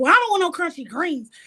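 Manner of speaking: pushy, confrontational, aggressive, high-pitched tone. Speaker retells a woman's answer to a question, imitating A Love, aggressive. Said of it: "because she's so aggressive".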